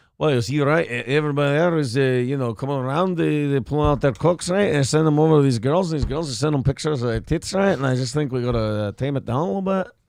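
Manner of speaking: put-on Russian statesman voice. Cutting to a leader's statement: Vladimir Putin impression. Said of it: "now we go to, uh, Vladimir Putin".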